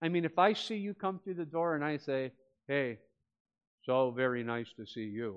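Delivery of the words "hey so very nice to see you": flat, slow, insincere delivery with no feeling. Example of an insincere greeting at the door: flat, insincere greeting. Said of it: "Is that sincere? No, that would be like one voice without one passion".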